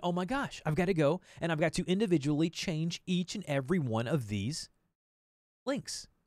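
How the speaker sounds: plain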